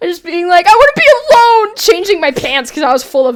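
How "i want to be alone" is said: put-on very high, shrill, angry teenage outburst. Retelling storming into the bedroom after slipping: imitating angry teenager. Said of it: "like a teenager slamming back into my bedroom".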